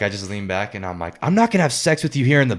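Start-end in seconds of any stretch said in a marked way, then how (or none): 1.2-2.6 acted yell, higher pitch. Retelling leaning back in a restaurant and yelling, reenacting the yell. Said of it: "I started yelling".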